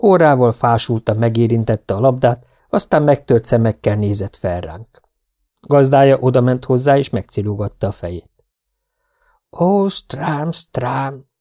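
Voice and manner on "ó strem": hushed half-whisper under the breath. The owner strokes the listless dog's head, half-whispered.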